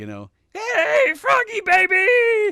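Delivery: high, loud puppet voice. Recalling Sesame Street, the speaker does Grover greeting Kermit in Grover voice. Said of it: "I learned how to do all the voices".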